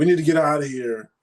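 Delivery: high, angry, agitated, animated screaming. Retelling a man screaming at the speaker's mom and aunt, imitating someone screaming. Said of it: "And he's screaming and stuff".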